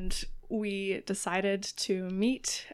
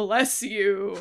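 big booming voice; 6 dB louder than usual. Retelling a game where the polite orc answers a sneeze: booming. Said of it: "they boomed".

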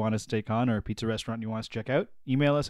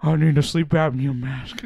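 mimicked mic breathing, higher, much louder; 4 semitones higher, 8 dB louder than usual. The other speaker objects to your impression; carry on anyway, imitating someone breathing into the microphone. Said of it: "I'm not breathing into the microphone like that".

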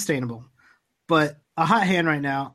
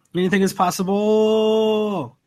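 grand, loud, high cry with "possible" drawn out; 6 semitones higher, 5 dB louder than usual. Echoing the other speaker's line, doing a KG impression. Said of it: "It's my best K G impression".

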